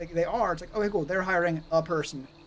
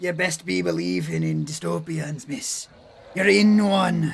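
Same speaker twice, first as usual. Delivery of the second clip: put-on loud, slow, drawn-out pirate accent; 5 dB louder than usual. Quoting a pirate line from Pirates of the Caribbean: Pirates of the Caribbean pirate accent. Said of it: "not get that accent even remotely right".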